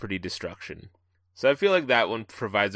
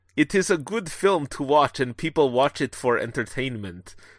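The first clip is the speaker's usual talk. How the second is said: attempted Russian accent; 5 semitones higher, 3 dB louder than usual. Attempting a line in a Russian accent, knowing a take can be edited out. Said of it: "I want to attempt this in a Russian accent".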